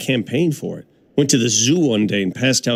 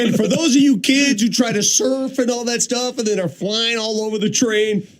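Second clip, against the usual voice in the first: high, rude train announcer voice. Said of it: "here's how I did it".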